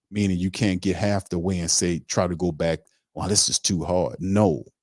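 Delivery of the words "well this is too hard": ordinary talk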